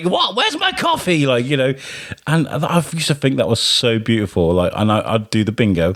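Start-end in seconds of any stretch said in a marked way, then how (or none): 0.0-1.3 put-on funny, rude tone at very high pitch. Retelling what a rude casino regular would say: imitating Sue being rude. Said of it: "she was rude to everybody, but in a, in a really funny way".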